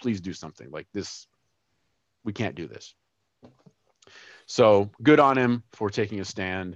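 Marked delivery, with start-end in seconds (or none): 0.0-2.9 mock pleading voice, quieter. Retelling a man's appeal straight to the camera: imitating someone pleading. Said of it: "I'm pleading with you".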